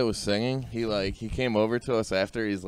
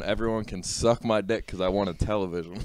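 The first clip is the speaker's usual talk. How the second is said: usual speaking voice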